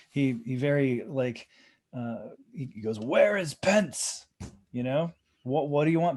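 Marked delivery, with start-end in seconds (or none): 3.0-4.2 high, grand, theatrical stage-actor declaiming voice. Retelling what an actor said on the Senate floor, imitating a theatrical voice. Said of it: "his theatrical voice".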